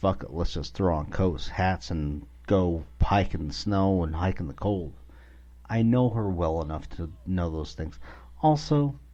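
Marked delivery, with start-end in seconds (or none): none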